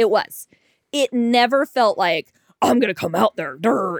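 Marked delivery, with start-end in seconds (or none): 2.6-4.0 put-on blustering, aggressive, dim-sounding tough-guy voice. Imitating an aggressive guy from a date: put-on aggressive guy voice. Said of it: "that's my voice for aggressive guys".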